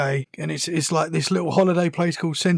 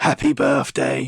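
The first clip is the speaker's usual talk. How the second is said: loud voice, lower pitch; 3 semitones lower, 3 dB louder than usual. Retelling what a daughter heard someone say out loud: imitating a loud voice heard. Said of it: "She heard someone go out loud".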